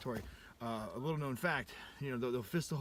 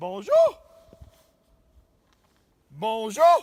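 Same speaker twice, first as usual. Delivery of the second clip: very high, very loud yelling with swooping pitch; 9 semitones higher, 18 dB louder than usual. Greeting someone in French, the speaker yells it out: yelling a greeting. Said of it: "that's why I'm yelling it in French".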